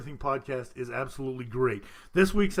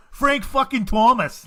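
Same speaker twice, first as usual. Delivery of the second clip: shrill, very loud, bad fake Boston accent; 10 semitones higher, 10 dB louder than usual. Taking turns trying a Boston accent on names: bad Boston accent. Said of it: "that was closer, but still not quite".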